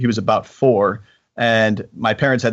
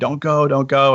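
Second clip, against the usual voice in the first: alarmed, urgent screaming, sounding alarmed; 4 semitones higher than usual. Retelling how someone screamed at a child crossing the street: imitating someone screaming. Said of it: "He started screaming at me".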